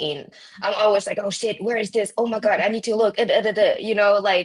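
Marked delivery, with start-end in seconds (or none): 1.2-3.2 acted-out panicked, stammering, rushed, frantic scramble. Retelling how losing a key makes them react: imitating own panic. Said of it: "I really panic".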